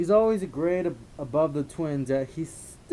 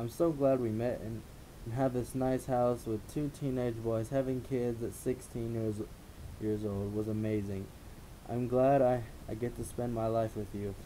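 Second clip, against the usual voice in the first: usual speaking voice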